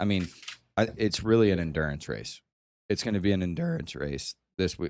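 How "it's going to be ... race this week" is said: voice cracking. Answering a question about how many laps: voice cracking. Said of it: "my voice just cracked".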